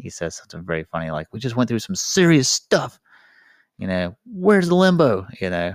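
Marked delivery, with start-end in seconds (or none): 1.3-5.3 exasperated, frustrated, raised voice with rising pitch. Retelling a movie scene where Patrick finds no limbo portal: imitating frustrated Patrick.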